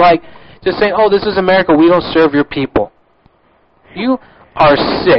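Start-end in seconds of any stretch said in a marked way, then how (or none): none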